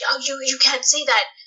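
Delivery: freaked-out, panicky voice. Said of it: "my cousin freaking out".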